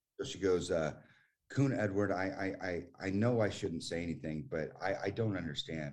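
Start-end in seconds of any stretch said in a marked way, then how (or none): none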